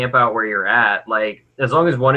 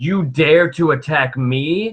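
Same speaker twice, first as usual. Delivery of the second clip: enraged, furious, threatening, challenging delivery; 3 semitones higher than usual. Recounting a fantasy battle, the speaker voices a character challenging a monster, furious. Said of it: "she's so pissed. She's like".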